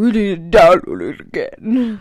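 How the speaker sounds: put-on deep voice, very loud and slow. Speaker repeats what their brother told them, imitating brother's deep voice. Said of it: "in his deep voice".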